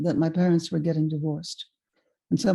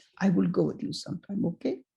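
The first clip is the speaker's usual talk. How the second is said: put-on French accent in an old man voice; 5 dB quieter than usual. Retelling the old man's question on the street a week later: imitating an old man's French accent. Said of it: "he said to me in a French accent".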